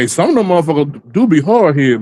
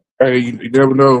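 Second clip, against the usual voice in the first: ordinary delivery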